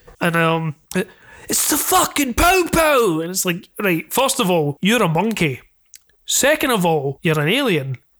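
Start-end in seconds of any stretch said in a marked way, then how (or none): 1.5-3.2 high, over-the-top Cockney London geezer voice. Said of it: "same colloquialisms as fucking Cockney London".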